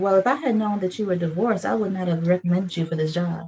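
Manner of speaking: ordinary talk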